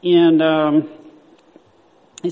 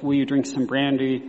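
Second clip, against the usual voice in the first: ordinary talk, nothing marked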